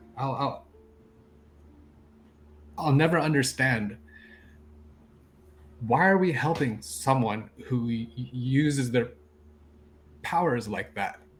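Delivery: shy, hesitant, meek, timid voice. Narrating, the speaker voices the cleric speaking out again: meek voice. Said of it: "You hear the meek voice of the cleric".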